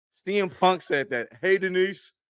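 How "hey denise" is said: put-on talking with mouth full, pitched higher. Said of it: "with a mouthful of donut".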